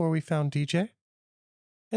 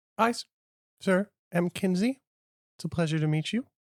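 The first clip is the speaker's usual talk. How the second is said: ordinary talk, nothing marked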